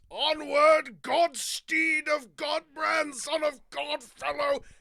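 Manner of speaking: roaring battle cry. Voicing a knight charging with lance raised: bellowing battle cry. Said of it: "just bellows".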